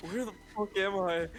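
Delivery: put-on dazed, confused man's voice. Voicing a background guy who is tripping, imitating a dazed bystander. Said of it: "He's like".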